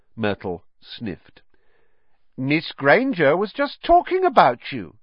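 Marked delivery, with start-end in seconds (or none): 2.4-4.9 sneaky, needling, sly tone, pitched up. Narrator reads Peeves speaking into Myrtle's ear: sly. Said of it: "said Peeves slyly in Myrtle's ear".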